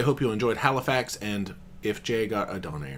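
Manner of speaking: ordinary talk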